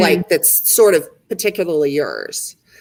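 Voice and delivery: plain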